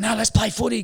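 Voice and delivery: high, pushy, insistent, egging-on voice.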